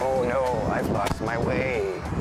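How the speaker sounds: odd, deep, low, slow put-on voice.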